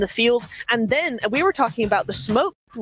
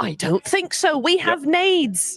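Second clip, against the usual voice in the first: put-on British accent, high pitched and slow; 6 semitones higher than usual. Voicing a team's reply while analysing a match: put-on british accent. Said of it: "Are you trying to do a British accent?".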